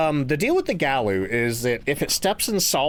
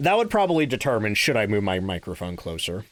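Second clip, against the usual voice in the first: normal talking voice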